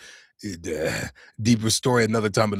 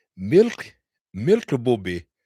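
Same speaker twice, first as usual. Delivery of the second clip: put-on Arabic accent with swooping pitch. Showing viewers a German snack, naming it in an Arabic-sounding accent. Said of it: "So I did that like a Habibi".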